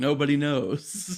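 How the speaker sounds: mock voice, slow, loud and solemn.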